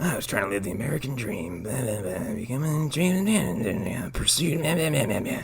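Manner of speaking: smug, smarmy, cheap film-noir narrator voice. Mocking a movie's noir voiceover, smarmiest voice. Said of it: "his smarmiest voice going like".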